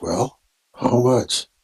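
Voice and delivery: drop into a stage whisper. Narrating a character returning and giving her line: whispering. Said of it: "and she whispers".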